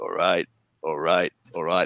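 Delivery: extremely low-pitched voice. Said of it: "he got a very deep voice".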